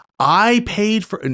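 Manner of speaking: irate, high-pitched, yelled complaining tone. Retelling the lady's complaint on the phone: imitating someone yelling. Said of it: "she's yelling at me".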